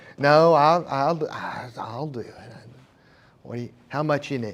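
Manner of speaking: put-on grudging, reluctant tone. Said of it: "The tone of voice".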